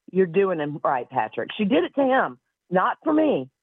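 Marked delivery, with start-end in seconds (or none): none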